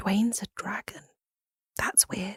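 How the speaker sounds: very soft, very quiet, close whisper. Voicing a character who hugs a friend and tells him a secret: whispering. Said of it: "whispers in hi-, his ear".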